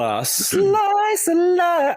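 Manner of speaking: mock announcer voice, very high, slow and drawn-out.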